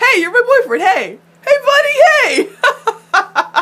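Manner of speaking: mock delighted, very high-pitched, loud, happy "hey". Imitating a character greeting his boyfriend: imitating a really happy hey. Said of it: "he's so happy".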